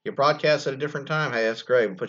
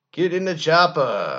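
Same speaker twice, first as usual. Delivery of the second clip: loud, slow yell with raised pitch; 5 semitones higher, 5 dB louder than usual. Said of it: "in an Arnold Schwarzenegger voice".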